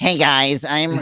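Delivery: high, dorky, very nerdy guy voice. Imitating a video game's only default character voice, the whitest nerdy voice. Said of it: "just like the whitest nerdy voice".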